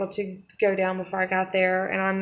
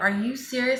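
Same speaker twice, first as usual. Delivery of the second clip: mock mad, exasperated, disbelieving angry outburst; 4 semitones higher than usual. Retelling own reaction after being told off: imitating own angry reaction. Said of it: "it made me so mad".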